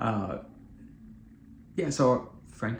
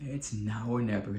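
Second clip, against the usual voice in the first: plain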